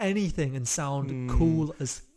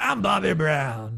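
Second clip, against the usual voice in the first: rough, creaky, put-on voice. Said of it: "spoke in our [name] voice".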